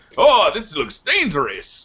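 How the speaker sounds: put-on Russian accent. Describing a talkative video game character, imitating his Russian accent. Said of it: "He's got this Russian accent".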